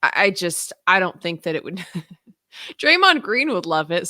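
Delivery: laughing while thinking aloud, talking through laughter. Discussing LeBron joining the Warriors, laughing while talking. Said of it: "I'm laughing and thinking out loud".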